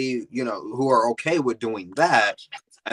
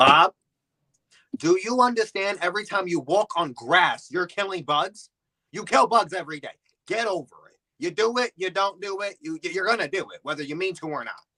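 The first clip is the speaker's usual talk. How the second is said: fed-up, annoyed scolding, pitched up high; 7 semitones higher than usual. Retelling what an annoyed gym teacher told a student: imitating an annoyed gym teacher. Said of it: "The gym teacher was so annoyed".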